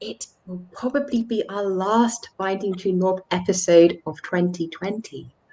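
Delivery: hushed, half-whispered voice. Announcing next week's episode to viewers, half-whispering. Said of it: "which I'm whispering".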